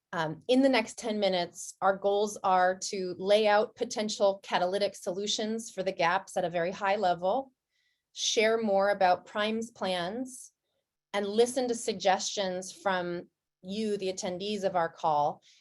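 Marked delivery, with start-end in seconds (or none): 8.1-10.5 slow, unhurried delivery. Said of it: "I'll speak slowly while y'all answer".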